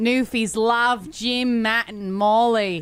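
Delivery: put-on Australian accent. Saying the show's tagline again on air, in a put-on Australian accent. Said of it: "That is definitely Aussie".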